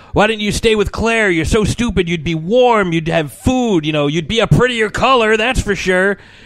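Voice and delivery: high, loud angry yelling. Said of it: "he starts yelling at him".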